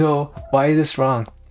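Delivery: frightened, scared, alarmed voice. Retelling an interview moment: imitating own scared reply. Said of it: "And then I got so scared".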